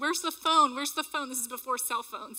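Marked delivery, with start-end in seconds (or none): 0.0-1.3 loud, raised scream, yelled out twice. Retelling dragging a friend out of the room, retelling a scream. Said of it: "I'm screaming".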